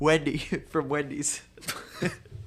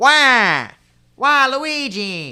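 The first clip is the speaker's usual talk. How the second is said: very loud, deliberately bad, swooping put-on voice; 9 semitones higher, 12 dB louder than usual. Between jokes, the speaker shows off their own bad impression: bad impression voice. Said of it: "It was a bad impression".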